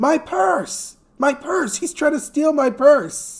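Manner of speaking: acted very high, shrill screaming cry. Recounting a woman in a bar pointing at him, imitating her shouting. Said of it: "she's shouting".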